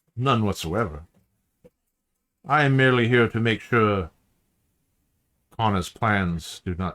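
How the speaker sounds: put-on Romanian accent. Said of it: "he has a very thick Romanian sort of accent".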